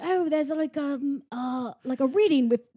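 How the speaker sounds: put-on posh, proper, refined British accent. Retelling what a refined chimpanzee character said, put-on refined British accent. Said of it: "has like a like, British accent".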